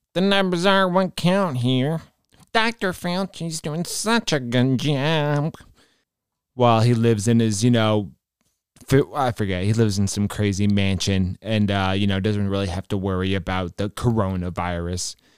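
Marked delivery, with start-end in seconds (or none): 0.2-5.6 sneering, mocking, high little nerdy voice. Mocking a speaker just heard, repeating his words: mocking little nerdy voice. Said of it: "I can't stand his little nerdy voice".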